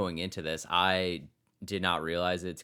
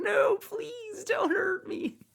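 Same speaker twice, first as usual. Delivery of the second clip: very high, slow, drawn-out fake sobbing. Joking about a villain cowering in the corner: mock crying as Lex Luthor. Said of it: "in the corner crying".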